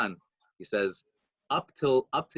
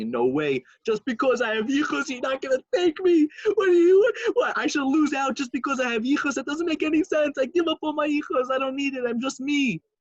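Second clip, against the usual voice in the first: put-on loud, very high-pitched sobbing; 14 semitones higher, 5 dB louder than usual. Retelling a story where a man begs on the floor: retelling a crying plea. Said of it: "he's crying and sobbing".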